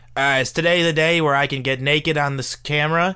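put-on American accent. Act out what Alden asks every day when he comes in, in a put-on American accent. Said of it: "Is that your American accent".

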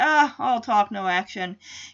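ordinary talk, nothing marked

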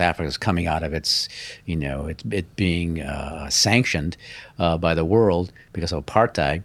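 ordinary talk, nothing marked

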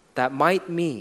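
heavy stress on might, drawn out slowly.

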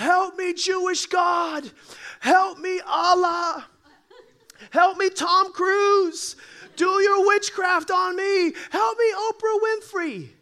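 high, drawn-out screamed cries, one after another. Retelling a film scene where Ricky Bobby screams for help: imitating Ricky Bobby screaming. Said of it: "he's screaming out".

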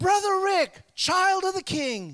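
loud, high-pitched yell at full voice. Speaker recounts a man from church calling to him in the store, retelling a loud yell. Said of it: "he yells out in the loudest voice".

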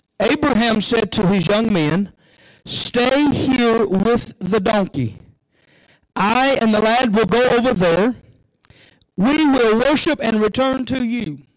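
very slow, low, deliberate reading aloud. Speaker reading verse 5 aloud, reading very slowly. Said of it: "Let me slow down and read this slowly".

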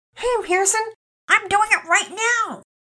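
high-pitched shout through the nose. After plunging into the pool, Penelope shouts to Pearson in her most nasal voice. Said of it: "in her most nasally voice, she shouted".

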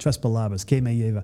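ordinary delivery

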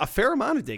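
pitch climbs on the word "diggity". Naming a level on a silly scale: upward inflection. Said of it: "I like the upward inflection".

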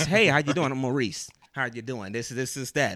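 clean-cut, polite professional work voice. Showing the difference between voices on social sites: at-work voice. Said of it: "your at work voice".

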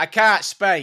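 loud, high, half-hearted blurted voice. Opening a podcast check-in with a half-assed Mick Morgan impression. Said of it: "very half-assed Mick Morgan impression".

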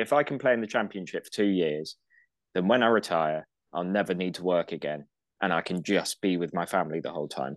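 ordinary delivery

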